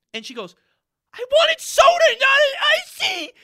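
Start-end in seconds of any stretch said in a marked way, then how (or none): 1.2-3.3 mock, very high, loud, drawn-out blubbering crying whine. Recounting a girl upset over her drink, imitating her crying. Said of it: "she's like crying".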